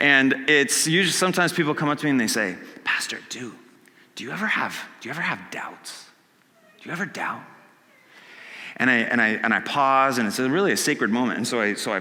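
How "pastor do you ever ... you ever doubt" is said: put-on lowered, hushed voice, much quieter. A pastor retells how people come up and ask him, imitating a lowered hushed voice. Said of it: "whenever somebody lowers their voice like that".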